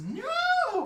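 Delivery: high, loud scream. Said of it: "to which she screams".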